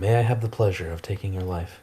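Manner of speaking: soft, hushed voice with quiet malice. A player's character pulls a dagger to attack him, said quietly. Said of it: "just quietly say".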